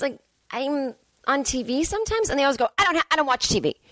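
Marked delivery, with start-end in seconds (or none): 2.8-3.7 put-on anger, much higher. Retelling what people always say to them about being on TV, mock-angry. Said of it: "And they say it angrily".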